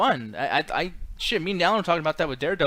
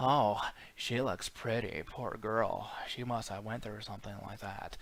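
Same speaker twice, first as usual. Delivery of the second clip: low, very quiet murmur, barely audible; 6 semitones lower, 11 dB quieter than usual. Giving an example of how he literally does another actor's voice, in a Heath Ledger voice. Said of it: "literally doing the Heath Ledger voice".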